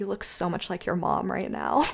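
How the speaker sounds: put-on very sensual, soft, breathy seductive tone. Retelling what he said mid make-out, in a put-on sensual voice. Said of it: "in this very sensual voice was like".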